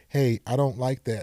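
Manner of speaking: usual speaking voice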